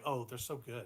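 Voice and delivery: quiet sarcasm. Showing the other speaker how the sarcasm segment works, sarcastic. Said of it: "We're gonna start with sarcasm".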